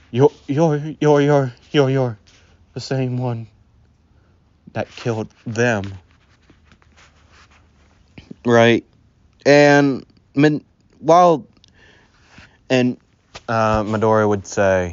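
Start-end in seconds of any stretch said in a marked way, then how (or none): 0.1-8.8 trembling, stuttering, shaky voice, acted. Telling a story, Koda faces the man in the cloak: Koda's shaky voice. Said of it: "he would like say in a shaky voice".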